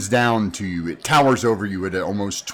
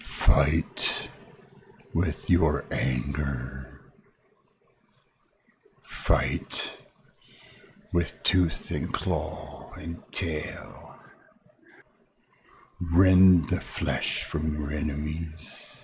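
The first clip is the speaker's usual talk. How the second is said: hushed, rumbling dinosaur voice; 5 semitones lower, 6 dB quieter than usual. Narrating a towering T-Rex leaning down to speak to you, rumbling T-Rex voice. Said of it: "in a voice that rumbles in your core".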